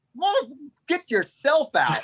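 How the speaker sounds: put-on very high, swooping, fed-up, exasperated voice. Retelling own reply to someone asking to be hauled out: imitating own exasperated retort. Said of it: "I had enough".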